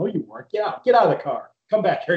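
acted-out loud, barked, shouted orders. Retelling a trooper's orders at a traffic stop: imitating someone yelling. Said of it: "he was yelling at me".

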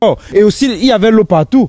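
high-pitched, loud comic character voice.

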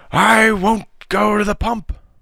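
very high, loud bellowing roar. Bleeding Jeff refuses Tom's offer to help him wash; roaring. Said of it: "roared Jeff".

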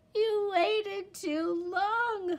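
shrill, loud, drawn-out outcry, pitched way up. A young wolf reproaches his father after the boy gets away, cried. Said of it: "cried Little Wolf".

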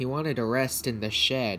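ordinary delivery

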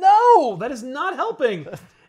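very loud, very high, very slow scolding yell, long no. Recounting a story scene, imitating one character yelling at another. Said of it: "He's yelling at [name]".

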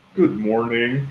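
on-air radio broadcaster announcer delivery. Asked by the host for a demo of his radio voice: radio announcer voice. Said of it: "give me a demo of your radio voice".

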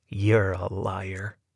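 low, intense voice full of hate and venom. A man accuses another man, in a low, intense, hateful voice. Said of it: "In a low, intense voice, as filled with hate and venom".

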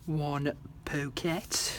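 put-on posh, proper English accent. Crafting on camera, announcing a finished pocket in a posh voice. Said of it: "That was me posh voice there".

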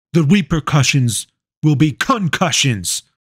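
grand commanding tone. Narrator reads his line as he turns and points at her, commanding tone. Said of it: "said in his most commanding tone".

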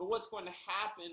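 high, quavering, trembling pleading voice. Narrator reads a child's line to a witch in a story: trembling voice. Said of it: "Meg's voice trembled".

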